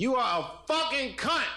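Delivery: play-acted very high, loud, shrieking yell. Retelling a woman leaning into another lady's ear at her table, retelling a loud yell. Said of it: "real loud".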